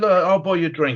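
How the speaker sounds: put-on drunk voice. Retelling a bar scenario from training, imitating someone acting drunk. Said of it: "He's acting a bit pissed".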